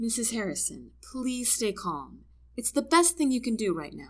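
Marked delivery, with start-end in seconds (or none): none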